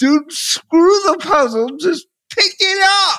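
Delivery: play-acted, loud yelling. Retelling watching the other speaker do a puzzle: imitating screaming at the tv. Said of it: "I'm sitting there screaming at the T V".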